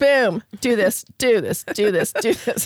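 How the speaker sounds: put-on blunt, direct, no-nonsense delivery. Retelling telling someone what to do: imitating own past direct orders. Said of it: "'cause I was being very direct".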